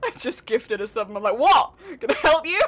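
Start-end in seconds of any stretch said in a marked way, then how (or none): 1.4-2.6 combative, aggressive outburst, high and very loud. A streamer, after gifting a sub, acts out a mock-aggressive reaction. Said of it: "I'm far too aggressive".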